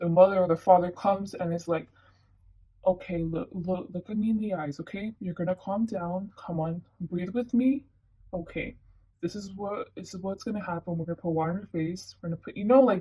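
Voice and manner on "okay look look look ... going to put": put-on calm, composed parent voice, quieter. Acting out a parent handling a child's anxiety attack: imitating a calm rational parent. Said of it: "just rational".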